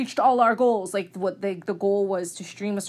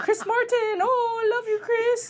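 mock very high shrieking scream. Retelling how a fan watching at home screamed: imitating a fan screaming. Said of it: "So she's screaming".

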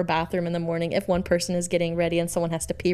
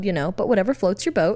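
normal talking voice

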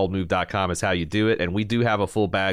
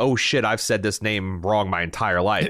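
ordinary delivery

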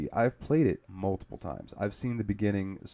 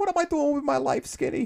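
put-on very high-pitched, thick, heavy Boston accent; 6 dB louder than usual. The speaker quotes a woman from the story: thick boston accent. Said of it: "she's got like this real thick Boston accent".

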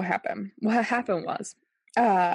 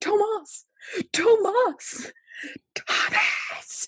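mock very high, obnoxious, repeated calling-out; 13 semitones higher than usual. Telling how you lay on the couch calling someone downstairs, re-enacting your screaming. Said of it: "just started screaming his name".

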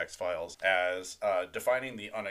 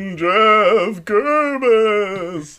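spooky announcer voice, much higher and louder; 12 semitones higher, 18 dB louder than usual. Podcast host announces a name like the announcer on the show: spooky SNL announcer voice. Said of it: "announcer on SNL suddenly as our spooky voice".

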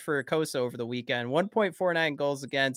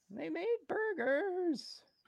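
bad character voice, very high, squeaky; 9 dB quieter than usual. Joking about bringing food to the team: terrible Morty impression. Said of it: "my terrible Morty impression".

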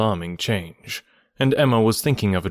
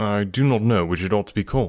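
plain reading voice

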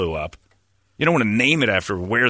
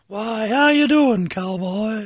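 very high, squeaky, slow, drawn-out voice; 13 semitones higher than usual. Mocking a cowboy star's high voice that kept him from talkies: Tom Mix squeaky voice. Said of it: "Tom Mix's little squeaky voice".

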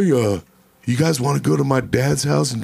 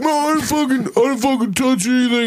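put-on very high, drunken voice; 11 semitones higher than usual. Retelling the accused man's denial: imitating a drunk man. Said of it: "he's all wasted".

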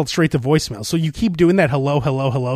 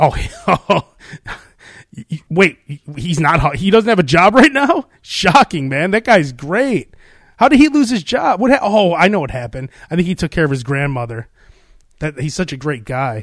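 normal talking voice

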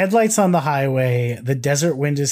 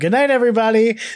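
cartoon character voice, pitched up high; 9 semitones higher, 4 dB louder than usual. Recalling a cartoon joke about a dirty line: Yakko voice. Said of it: "Yakko would just go".

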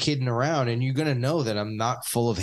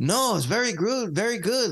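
put-on Mexican accent, pitched up; 9 semitones higher than usual. Retelling what mexican people answered in a video: imitating a mexican accent. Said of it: "That's their accents".

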